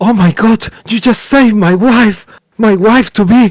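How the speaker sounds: very high, frantic, freaking-out gushing outburst. Voicing Sergei after his wife is revived: freaking out as Sergei. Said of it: "And they start freaking out".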